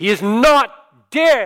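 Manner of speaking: booming, very loud, very slow, drawn-out voice. Retelling his ethics teacher standing up to address the room: booming voice. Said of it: "in his booming voice said".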